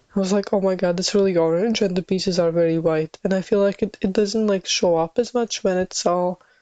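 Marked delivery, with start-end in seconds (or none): none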